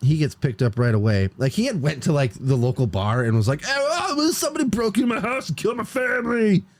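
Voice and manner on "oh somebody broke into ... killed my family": very high-pitched puppet voice. Retelling what a man told people at the local bar, in a Muppet voice. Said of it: "abridged Muppet version?".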